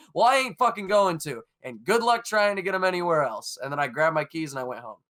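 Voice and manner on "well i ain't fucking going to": mock-defiant, acted-out defiant tone. Retelling facing down a man who demanded a price change; retelling a defiant retort. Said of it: "I look him right in the eye and I go".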